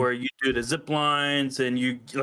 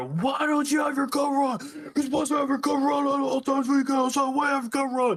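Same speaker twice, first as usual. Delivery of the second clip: very high-pitched, rapid, belligerent shouting; 12 semitones higher than usual. Retelling how a man yelled at a woman, imitating a belligerent yell. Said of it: "I'm talking belligerent, yell at her".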